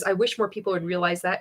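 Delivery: ordinary talk, nothing marked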